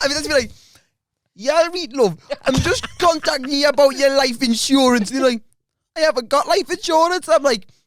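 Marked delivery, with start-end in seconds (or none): 1.3-5.1 put-on Geordie accent, patter-style delivery. Retelling prank phone calls made with a coworker, doing a put-on Geordie accent.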